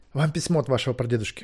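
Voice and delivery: ordinary delivery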